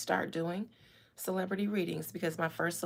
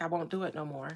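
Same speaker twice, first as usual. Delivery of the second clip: put-on pleading tone. Voicing what someone seems to be almost saying: imitating someone pleading. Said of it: "It's almost like he's pleading".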